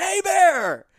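high, piercing, shrill yell at full volume. Retelling a face-off with a bear, acting out shouting at it. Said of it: "I just shouted".

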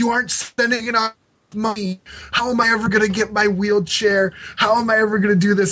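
scornful, derisive villain-style taunting voice. Retelling later promos scolding fans: imitating Ron Wright, derisive. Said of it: "derisive toward the fans".

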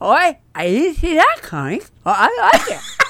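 English accent through full mouth. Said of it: "That was my English accent".

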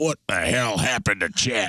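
exasperated, dismayed, baffled, fed-up dad voice. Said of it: "Tom's just like looking in the mirror shaving like".

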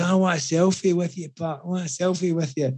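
mock drunken manner. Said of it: "Absolutely out of it".

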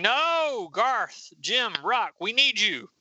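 high-pitched screaming. Retelling a superhero fight scene, a heroine calls to her teammates: screaming. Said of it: "She's screaming".

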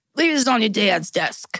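rough, attempted Boston mobster accent. Retelling what a friend would say, the speaker attempts a Boston accent. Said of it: "I can't really do a Boston accent".

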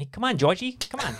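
put-on childish, taunting playground kid voice.

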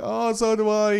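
put-on whiny voice. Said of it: "I don't know why I made a whingy voice".

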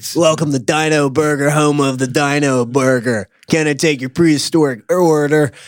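laid-back surfer voice. Trying out a voice for a fast-food worker greeting customers, in a surfer-like voice. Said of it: "It's somewhere between a surfer".

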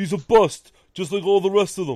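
very loud, high, griping sports-fan rant. Speaker predicts what New York fans will say if Rosario does poorly: dumb New York fan impression. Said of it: "my best New York dumb fan impression".

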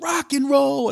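screechy, shrill, very high-pitched yell. Retelling a fan who yelled in their face: imitating someone yelling. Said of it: "yelled right in my face".

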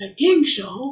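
man's voice pitched very high. Retelling the teacher's answer to a question, imitating Rinpoche's voice. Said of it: "I have to imitate his voice a little bit".

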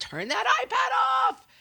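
very high, slow, drawn-out yell.

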